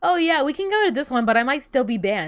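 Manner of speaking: offhand, casual, tossed-off throwaway aside. Speaker quotes mom about going to a buffet, retelling mom's offhand remark. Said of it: "my mom offhandedly mentions, like as like a passing comment".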